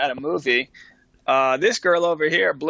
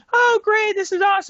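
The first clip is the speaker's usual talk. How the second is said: very high, all-falsetto surface voice. Describing Danielle's outward reaction to the new girl, falsetto imitating Danielle. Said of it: "she's all falsetto".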